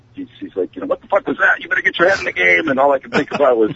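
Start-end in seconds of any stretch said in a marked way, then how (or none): 0.9-2.7 put-on raspy, rough, high-pitched yell. Retelling being yelled at from behind during a deadlift: imitating Eddie yelling. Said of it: "I could hear Eddie yelling over my shoulder".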